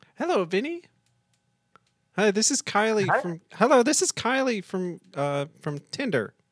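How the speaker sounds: fake woman's voice. Calling someone on the phone and introducing yourself, in a put-on lady voice. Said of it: "Doing the lady voice".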